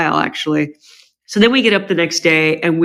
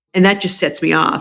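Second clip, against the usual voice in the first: normal talking voice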